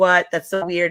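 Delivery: ordinary delivery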